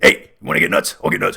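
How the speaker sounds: rattled-off movie-ghost voice. Answering a question about the movie Beetlejuice, doing a Beetlejuice impression. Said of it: "I'm doing my Beetlejuice impression".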